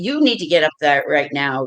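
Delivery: mock-stern, acted stern tone. Acting out ordering an obstinate woman to come out, in a mock-stern voice. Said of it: "I'll talk with a real stern voice".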